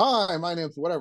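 voice pushed out with energy. Showing beginner DJs how to introduce themselves: projected voice. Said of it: "you project it out more".

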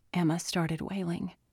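ordinary delivery, nothing marked

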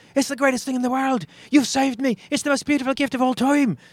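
very high, loud, booming, belted Irish brogue. Telling a joke, voicing Seamus speaking to the genie, in an Irish accent. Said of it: "I'm impressed by the Irish accent".

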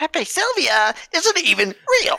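very high voice with big swooping pitch. Riffing on a board covered in red lines: Charlie Day impression. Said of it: "it freaks me out how accurate the voice is".

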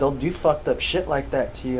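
ordinary delivery

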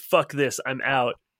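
acted angry tone. Retelling how a man stormed out, imitating someone pissed off. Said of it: "it pissed him off so much that he was like".

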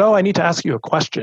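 patronizing, talking-down tone. Recounting a first date, the speaker quotes what his date asked: imitating a condescending tone. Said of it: "she took on kind of this condescending tone".

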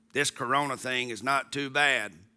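put-on small, low, soft, froggy little-boy voice. A father retelling what his son Cooper told him, imitating Cooper's little froggy voice. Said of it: "in his little froggy voice".

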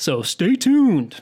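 loud, polished on-air radio-announcer voice. Co-host closing a teaser on the show, radio announcer voice. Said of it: "That was my best radio voice".

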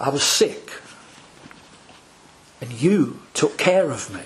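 slow reading with long pauses. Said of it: "let me read it slowly".

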